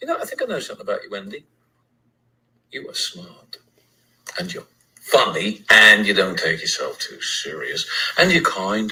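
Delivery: very low, swooping, slight put-on English accent. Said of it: "uses his accent. This man does not have an accent".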